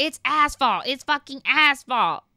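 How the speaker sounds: worked-up, insistent, put-on yelling. Retelling a partner's outburst in a crowded restaurant: imitating someone yelling. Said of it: "he just yelled over and over".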